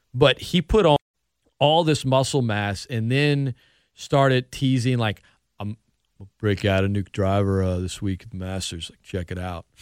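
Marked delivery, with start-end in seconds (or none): 6.2-9.7 low, cool, laid-back snowboarder dude voice. Retelling a golfer's teasing, in a cool snowboarder voice. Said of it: "That was your cool snowboarder voice".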